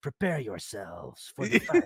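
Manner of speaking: put-on weird foreign accent, vaguely Swedish, with oddly placed sounds. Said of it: "Swedish accent or something".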